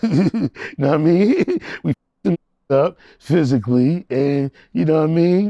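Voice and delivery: loud delivery, laughing throughout.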